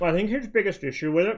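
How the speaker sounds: talking with mouth full. Speaker eating during a conversation, talking with mouth full. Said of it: "talking with my mouth full".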